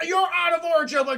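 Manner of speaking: heated screaming yell. Retelling a movie meeting where two men argue, imitating someone screaming. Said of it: "they're just screaming at each other".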